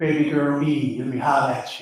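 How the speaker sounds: put-on smooth, sweet-talking, flirtatious tone. Acting out a story scene in character: flirtatious tempter character. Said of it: "let me get in character".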